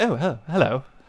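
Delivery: prim, prissy, posh robot voice. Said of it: "Start talking like C three P O from Star Wars".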